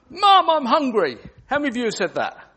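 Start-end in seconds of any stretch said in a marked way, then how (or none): 0.2-1.2 big, very loud, high-pitched call-out. Asked to say a phrase for the group, the speaker says it in a nice loud voice. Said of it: "Harvey in a nice loud voice".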